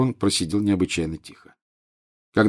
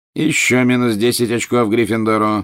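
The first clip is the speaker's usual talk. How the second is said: plain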